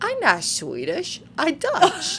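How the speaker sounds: very high, sing-song, swooping silly dog voice. Retelling how the speaker's mom voices her Dutch-breed dog: speaking as the dog. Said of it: "still in his voice".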